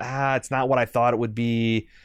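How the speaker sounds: normal talking voice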